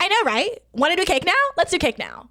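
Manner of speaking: put-on high, swooping valley girl voice. Telling a story, quoting what Bethany said; Bethany's Valley Girl voice. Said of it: "She says it in her like Valley Girl voice".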